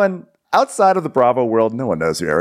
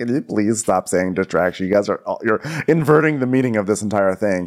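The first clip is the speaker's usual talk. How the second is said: plain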